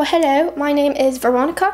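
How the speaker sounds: attempted, put-on British accent. Asked by another speaker to talk in one, she tries an attempted British accent. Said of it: "can you speak in a British accent?".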